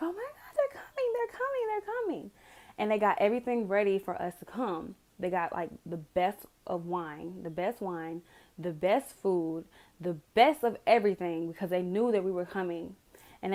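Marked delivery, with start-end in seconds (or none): 0.0-2.3 very high, excited squeal. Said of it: "They were so excited".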